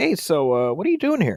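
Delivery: animated high swooping lilt. Retelling a confrontation on the show: imitating Chris Hansen. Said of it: "out walks Chris Hansen from N B C News, and he'd just be like".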